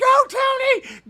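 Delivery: very high, loud scream. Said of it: "my mother just scream".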